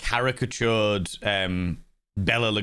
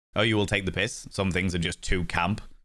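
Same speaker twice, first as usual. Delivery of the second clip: plain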